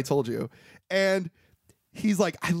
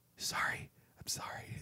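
barely-there, very soft hushed whisper. Retelling a scene where he whispers an apology: imitating a very soft whisper. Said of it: "We hear him whisper very, very softly".

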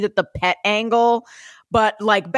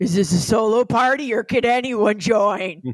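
very creepy, eerie, spooky, unsettling voice. Imagining calling out in the middle of the night, speaker uses a very creepy voice. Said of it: "say in a very creepy, creepy voice".

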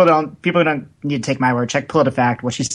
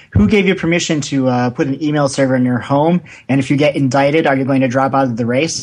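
ordinary talk, nothing marked

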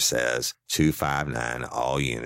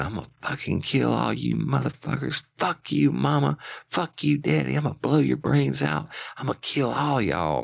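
acted, very high, ragged, rough, raging scream; 13 semitones higher than usual. Retelling what an armed man was heard screaming: imitating a man screaming threats. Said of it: "I could hear the dude screaming".

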